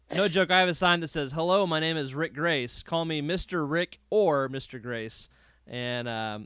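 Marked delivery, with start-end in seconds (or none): none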